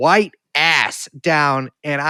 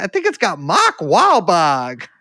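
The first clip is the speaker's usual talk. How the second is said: bad, slow, swooping Carolina accent, half Boston; 3 semitones higher than usual. Imitating what a guy said while admitting you're not doing it right, bad Carolina accent, kinda Boston. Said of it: "an extraordinary example of of a Carolina accent".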